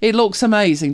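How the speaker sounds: insistent tone with stress on looks.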